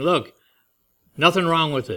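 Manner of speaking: plain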